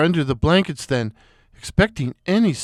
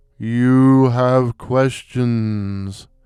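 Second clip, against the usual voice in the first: deep, ghostly, otherworldly intoning; 6 semitones lower than usual. A floating skull addresses the narrator, in a deep, spectral voice. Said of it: "it intoned in a deep, spectral voice".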